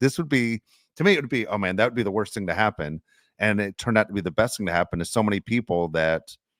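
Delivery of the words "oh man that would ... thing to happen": ordinary talk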